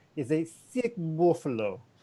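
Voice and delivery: slow put-on Russian accent. Borrowing a chess phrase from a grandmaster: Russian accent quoting Sam Palatnik. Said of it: "I apologize for the first Russian accent".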